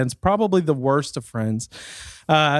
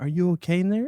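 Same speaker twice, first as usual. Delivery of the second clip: syrupy, sugary, sweet-sounding voice; 2 semitones higher, 5 dB quieter than usual. Retelling a knock on the occupied door, the speaker imitates someone's sweet voice. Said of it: "The sweet, sweet voice of somebody saying".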